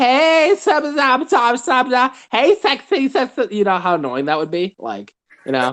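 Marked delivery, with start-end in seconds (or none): 0.0-3.5 high, slow, sultry female voice, lisp on every s. A speaker mocks how a woman with a lisp talks, imitating a woman with a lisp. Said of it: "Like a woman with a lisp".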